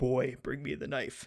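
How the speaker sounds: low, deep-toned voice. Retelling a game's opening, a character calls to Atreus in a deep voice. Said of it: "you hear the deep voice and he's like".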